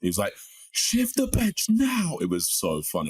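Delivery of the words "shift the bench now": shrill, very high, loud, drawn-out screaming. Retelling a teammate calling for the bench before coming on: imitating a teammate screaming. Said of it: "just screaming at us".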